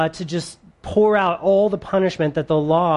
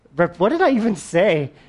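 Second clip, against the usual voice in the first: normal talking voice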